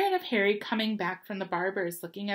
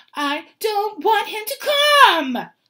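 very high, very loud, shrill pretend wailing, fake sobbing; 12 semitones higher, 11 dB louder than usual. Reading a story, a boy in his mother's arms objects: yelling between fake sobs. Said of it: "Dudley yelled between huge pretend sobs".

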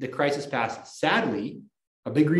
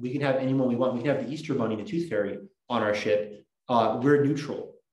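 ordinary talk

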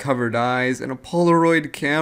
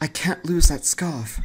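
put-on quiet, soft British accent, pitched higher; 3 semitones higher than usual. Voicing a character in a game who lost a scarf: quiet British accent. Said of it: "quiet with the British accent".

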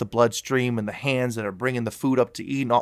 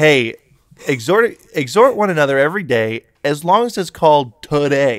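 loud, snarky, sing-song sarcastic mock reading; 4 semitones higher, 6 dB louder than usual. Paraphrasing a scripture verse the way it sounds to him: put-on sarcastic tone. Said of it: "it's kinda sarcastic".

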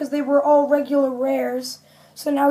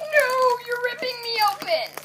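very high, soft, squeaky little voice; 10 semitones higher, 5 dB quieter than usual. Speaker opening a Pokémon card pack, voicing the pack itself, in an odd voice. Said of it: "That was an odd voice, but I just did it".

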